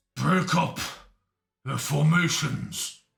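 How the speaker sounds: wheezy, rough, words pushed out on breath. A game master voices a character calling out before throwing a javelin, wheezy through his breath. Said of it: "wheezy through his breath".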